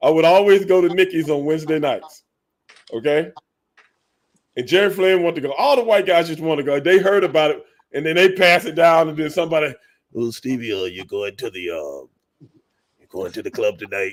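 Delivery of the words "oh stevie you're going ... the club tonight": deep, hushed, offhand casual buddy voice. Telling a story about Wednesday nights at Nicky's, speaker quotes a friend: imitating a friend. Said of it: "you just did a voice imitation of your brother friend".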